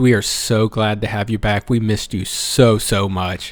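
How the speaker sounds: speaking sarcastically. Podcast co-host tells the host, back after a while, they were missed, in a sarcastic tone. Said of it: "I sense sarcasm".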